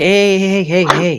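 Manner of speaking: very soothing, calm, slightly high voice. Player's character speaks to an angry tiger to ease its mood, soothing and calm. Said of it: "but like in a very soothing, calm".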